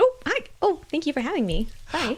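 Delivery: high, polite, courteous lady ghost voice. Guest introduced on a podcast as a ghost, greeting the hosts in a polite lady ghost voice. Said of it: "This is our polite lady ghost".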